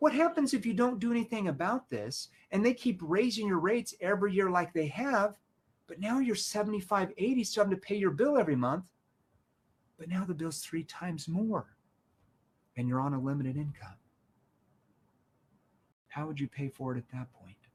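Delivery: starts skeptical, shifts to concerned and worried. Demonstrating a solar sales pitch to listeners, skeptical turning concerned. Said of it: "Look at my tone, how it changes, skeptical to concerned".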